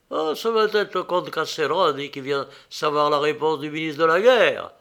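ordinary delivery

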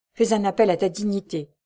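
ordinary delivery

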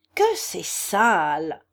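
crying out with the word "sale" stretched long. Nastasia Philipovna reacts to Ferdichenko's story before the listeners, exclaiming. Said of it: "s'exclama Nastasia Philipovna".

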